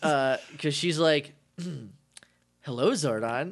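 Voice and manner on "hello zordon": put-on bratty passive-aggressive voice. Recapping a favorite episode scene, imitating Kim as a passive-aggressive brat. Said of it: "completely translated into passive-aggressive brat".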